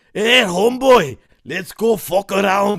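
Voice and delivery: put-on full-on, very loud, high-pitched Scottish accent. Acting out how people supposedly talk to him, in a Scottish accent impression. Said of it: "It's like all Scottish".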